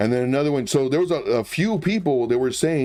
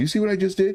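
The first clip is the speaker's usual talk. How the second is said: mock self-satisfied, smug tone with pitched-up voice; 6 semitones higher than usual. Retelling what a millionaire said to camera with a smirk: imitating a smug smirking remark. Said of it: "He did a little smirk".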